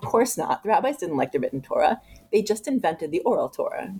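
ordinary talk, nothing marked

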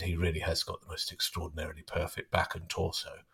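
secretive voice an octave down, very low, very quiet. Quoting what a woman said after going quiet, in her low voice. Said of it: "a voice that was about an octave lower than she normally uses".

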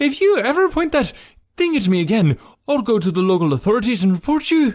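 loud yell, very high-pitched, threatening tone. Reading Jekram's line to Malik in a story, shouting. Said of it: "Now Jekram was shouting".

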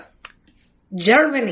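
put-on Russian accent. Answering a quiz question about a league's country: put-on Russian accent. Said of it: "I said it in a Russian accent".

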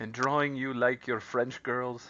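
poorly done put-on French accent. Comparing past times to partying on the Titanic's deck, slipping into a bad French accent. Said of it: "I don't know what that accent was".

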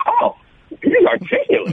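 astonished, very high-pitched surprised tone. Illustrating a tone that implies surprise: surprised, shocked tone. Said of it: "Like you're surprised, like you're shocked".

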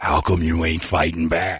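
put-on whisper. Retelling what an opponent whispered in a boxing round: imitating a whisper. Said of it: "he actually whispers in my ear".

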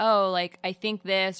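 acted tentative, noncommittal, unsure hedging tone. Imitating own habit of hedging opinions while speaking: imitating own unsure hedging tone. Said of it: "my tone of voice when I'm speaking".

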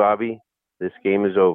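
put-on calm, even voice. Retelling what Felipe Alou said in the dugout: imitating Felipe Alou calmly. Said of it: "this most calm face of Felipe Alou said".

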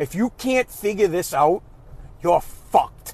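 mock firm, no-nonsense, stern delivery. Retelling what was said to a son on the phone: stern line. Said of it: "nice and stern".

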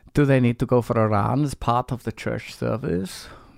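imitated Dutch accent. Speaker reads out a question from Peter Gray: Dutch accent for Peter Gray. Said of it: "you don't probably have this accent".

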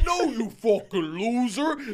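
slow orc character voice, held throughout. Retelling a man dressed as an orc pointing a foam sword at the speaker, in an orc character voice. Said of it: "Stays in his character voice".

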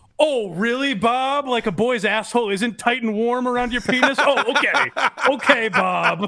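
mock heavy sarcasm, dismissive and brushing off. Imagining the accused answering the interviewer with sarcasm: sarcastic Jerry Sandusky impression. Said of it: "But at least he didn't go".

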